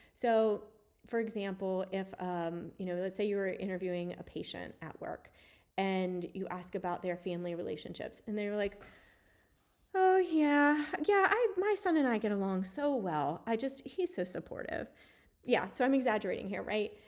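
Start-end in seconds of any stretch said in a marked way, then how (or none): 10.0-14.9 played-up high, uncertain, hesitating, unsure voice. Role-playing an interviewed patient talking about their son, in a hesitant, uncertain voice. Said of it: "I also hear some hesitancy in your voice or some uncertainty".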